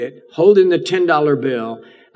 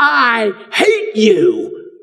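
put-on screaming in high, swooping little-girl voice; 9 semitones higher, 3 dB louder than usual. Speaker retells a woman whose voice changed, screaming in a little girl's voice. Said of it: "her voice changed to the voice of a little girl".

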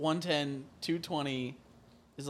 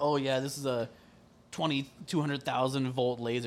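usual speaking voice

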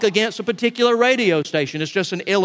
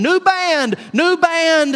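repeated, high, squawking parrot voice; 9 semitones higher, 3 dB louder than usual. Telling a story about a church's old parrot, squawking parrot voice. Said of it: "that parrot started squawking".

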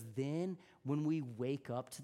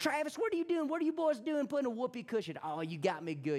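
put-on thick Texas accent, high and loud; 10 semitones higher, 5 dB louder than usual. Retelling the grandfather reacting to the whoopee cushion prank, in Bam Bam's thick Texas accent. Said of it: "in his thick Texas accent".

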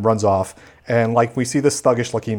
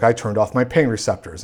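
ordinary talk

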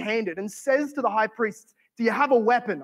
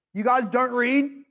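derisive, mocking, needling jab; 2 semitones higher than usual. Retelling a question that mocks the listeners: imitating a mocking tone. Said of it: "He's mocking them".

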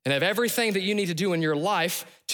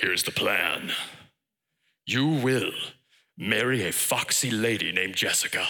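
very deep, low godlike voice; 10 semitones lower than usual. God speaks to a listener waiting in a closet, in a James Earl Jones voice. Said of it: "he will sound like James Earl Jones".

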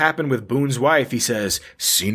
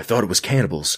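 put-on old politician voice, lower pitch; 5 semitones lower than usual. Reading a question aloud for laughs: Reagan voice. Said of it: "read the follow-up question in Reagan's voice".

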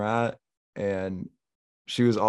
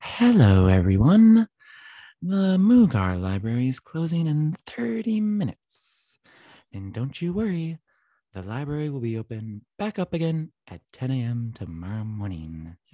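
creepy, swooping, unsettling announcer voice; 4 semitones higher, 5 dB louder than usual. Speaker imitates the library's closing announcement to friends, in a creepy announcer voice. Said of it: "this guy is so creepy".

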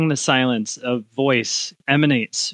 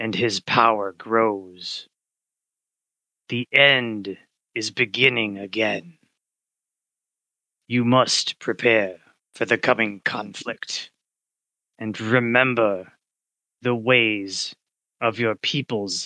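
rolling, raspy forest-spirit voice. A forest spirit addresses the sorcerer, in a rolling, raspy voice. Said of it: "A rolling, raspy voice of dry leaves and tree branches in the wind. / a voice emanates from every tree and leaf and twig in the forest".

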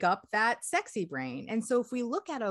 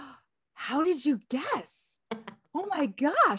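put-on astonished, amazed gushing, pitched high; 7 semitones higher than usual. Speaker retells a client's reaction to a correct guess: mock-amazed client. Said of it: "client amazed at guess".

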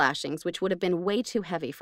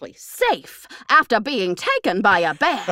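theatrical, loud, dramatic newscaster headline delivery; 3 semitones higher, 6 dB louder than usual. Rereading a news headline aloud, dramatic headline reading. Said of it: "Maybe I should read it more dramatically".

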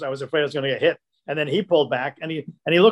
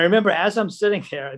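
usual speaking voice

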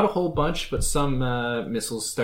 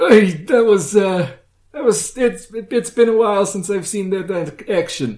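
put-on Transylvanian accent, higher, louder, slower; 7 semitones higher, 8 dB louder than usual. Recounting a character landing and returning to true form: Transylvanian accent. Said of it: "I kind of really stuck to the Transylvanian accent".

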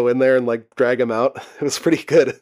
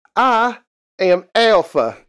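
put-on over-the-top swooping, sing-song Southern accent; 8 semitones higher than usual. Imitating how a show character talks: over-the-top Southern accent as Alpha. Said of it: "Alpha has a very Southern accent".

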